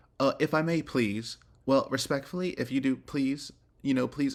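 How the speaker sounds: passive-aggressive politeness. Imitating a neighbour's overly polite requests: imitating snarky niceties. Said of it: "insert these niceties in a very snarky way".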